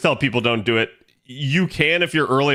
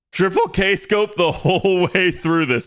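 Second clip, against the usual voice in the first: voice cracking up high mid-line; 6 semitones higher than usual. A streamer talks to chat about the game lineup, voice cracking. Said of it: "My voice cracked".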